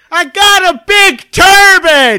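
very loud, very high, very slow, booming drawn-out holler. Retelling how Kev leaned out of a moving truck: imitating someone yelling. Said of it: "and he yells".

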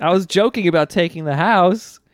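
high, pleading, groveling and begging. Retelling a scared character begging Koichi for forgiveness: imitating someone begging. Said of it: "he's begging Koichi".

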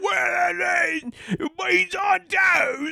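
very high, shrill, yelled, dreadful fake British accent. Mocking a man's put-on accent, doing a terrible fake British accent. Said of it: "he puts on the shittiest".

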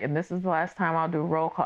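put-on choked-up, tearful voice. Retelling an organizer's last roll call: imitating someone choked up. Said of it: "he got choked up and he was just like".

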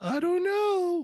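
pitched way up and loud. Voicing a figure who doubts anyone will buy it: Ernie voice. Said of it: "he gets the Ernie voice".

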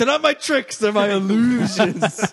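high, loud, offended, indignant mock squeal.

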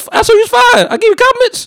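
very high indignant voice. Retelling what he told a woman he met, imitating himself in a high voice. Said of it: "Why your voice is damn high?".

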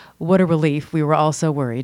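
put-on flat deadpan. Retelling another person's reaction to good news, quoted deadpan. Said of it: "very deadpan".

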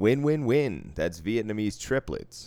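booming, very loud put-on radio announcer voice. Recalling a phrase they always said, in a radio voice. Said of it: "I don't know why I said it in a fucking radio voice".

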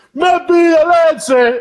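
very high shriek, leche drawn out. Retelling a friend screaming at a wedding: imitating Wells screaming. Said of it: "and just screams".

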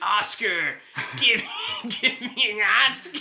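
very high, stretched-out, drawn-out screaming shriek. Retelling a movie scene after a bear attack: imitating Leonardo DiCaprio screaming. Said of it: "he's screaming".

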